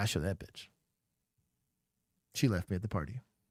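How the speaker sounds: mock smug, pleased, self-satisfied tone. Imitating the reporter's smug face after talking about her: imitating a smug reporter. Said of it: "look at this smug face".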